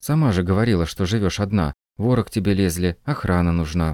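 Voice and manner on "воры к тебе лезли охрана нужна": ordinary delivery, nothing marked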